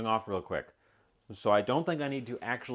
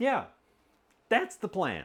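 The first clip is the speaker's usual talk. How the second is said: voice cracking up high mid-word; 10 semitones higher, 3 dB louder than usual. Talking through the plan for the dish when the voice cracks. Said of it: "my voice just cracked".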